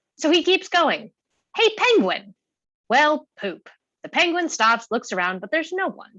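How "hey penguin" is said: shrill, grating, screechy, high voice. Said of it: "voice is high-pitched and screechy".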